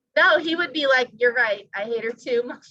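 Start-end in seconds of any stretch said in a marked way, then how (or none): none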